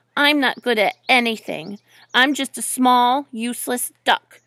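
ordinary talk

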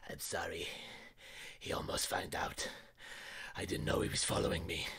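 hushed, breathy goblin whisper. Running the game, voicing a goblin as the player turns round to face it, goblin voice. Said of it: "the goblin looks at you and goes".

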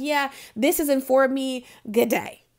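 ordinary talk

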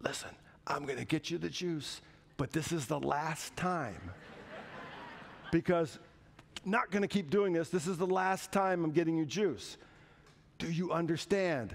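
stern, authoritative, fatherly, hushed whisper. A dad retells what he told his two-year-old at 2 a.m.: retelling an authoritative dad whisper. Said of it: "in my most authoritative dad whisper".

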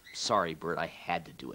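ordinary talk

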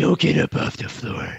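rough, creaky tough-guy voice. Showing how Batman would say the threat: Batman voice. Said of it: "Batman would be like".

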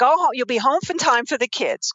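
put-on New York Queens accent. Quoting her parents' advice: imitating parents in New York Queens accent. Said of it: "I just broke into the New York Queens accent".

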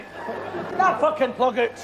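high-pitched yelled shout. While others argue over a vacuum that isn't lifting, another person is shouting. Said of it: "What are you shouting about?".

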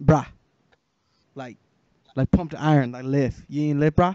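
put-on accent sounding Jamaican, bro-style. Called on for a raised hand, answering in a put-on accent that sounds Jamaican. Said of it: "What kind of accent is that?".

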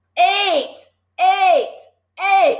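very high, shrill, bullying, repeated yelling. The Trunchbull, to the boy facing an enormous cake: yelling. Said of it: "The trunchbull was yelling".

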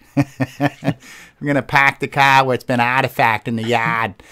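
put-on Boston accent. On a group call, showing the others an accent: Boston accent. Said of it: "we can do a Boston uh, accent".

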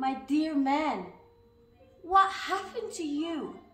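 very loud, high, stunned cry of alarm. A woman, seeing a tiny man with duck's wings for arms, crying out. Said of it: "cried Mrs. Greg, going marble in the face".

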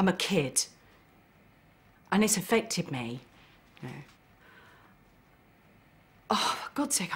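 angry and upset. Telling what happened to them as a child, getting so mad. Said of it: "I'm getting so bloody mad".

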